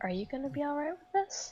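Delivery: hushed, held back. Hanging back as far as possible, a player speaks to Holt, very quiet. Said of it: "kind of very quietly say to Holt".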